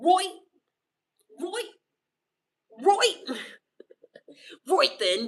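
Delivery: put-on British accent, loud, slow and drawn-out. Teased by others about slipping into an accent, repeating a phrase in a British accent. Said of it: "talk in a British accent".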